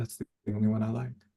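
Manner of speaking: soft, fast muttering under the breath. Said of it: "muttering under her breath".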